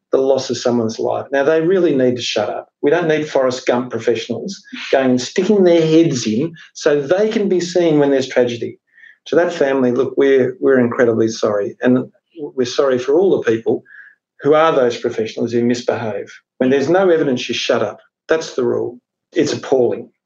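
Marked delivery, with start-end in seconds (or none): none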